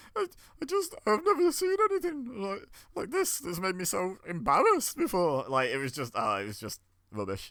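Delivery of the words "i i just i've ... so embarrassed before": very high, bad, fake tearful sobbing voice. Speaker mocks a commentator's bad acting on a show: imitating Excalibur's cry voice. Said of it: "He was giving it the cry voice".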